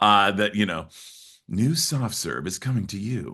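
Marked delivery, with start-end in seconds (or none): 1.5-3.3 put-on commercial voiceover announcer voice. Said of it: "I have done commercials like that".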